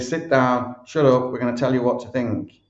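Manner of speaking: ordinary talk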